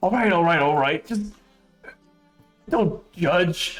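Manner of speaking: jittery, nervous voice, swallowing hard. Voicing a magic item dealer who gives in after a failed willpower roll: nervous gulping merchant. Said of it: "gulps down his throat and goes".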